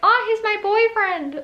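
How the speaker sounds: very high-pitched little squeaky voice. Recalling a primary school boyfriend, in a high-pitched squeaky voice. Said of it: "in this high-pitched squeaky voice".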